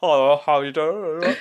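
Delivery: Harlow accent, little tongue movement. Imitating the Harlow way of speaking, with no tongue movement: imitating a Harlow accent. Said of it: "It's very much like that".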